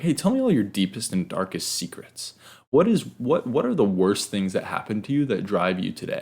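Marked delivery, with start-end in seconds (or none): 0.0-2.3 mock very cheery, sing-song, nosy, prying interviewer voice. Retelling how a journalist questioned him: imitating a cheerful journalist. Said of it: "very cheerfully was like".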